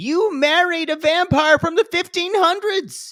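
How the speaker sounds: high, loud scream. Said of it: "what I wanna scream is".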